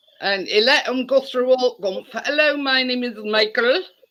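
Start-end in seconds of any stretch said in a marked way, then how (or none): 2.1-3.8 imitated Indian-accented voice. Retelling a scam phone call Chris answered, voicing the caller: imitating an Indian accent. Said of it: "an Indian voice".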